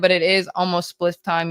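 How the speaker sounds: ordinary delivery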